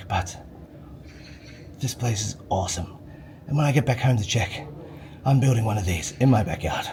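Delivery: soft, hushed, quiet whisper. Talking in a public place, whispering. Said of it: "I'm whispering because it's not polite to be really loud".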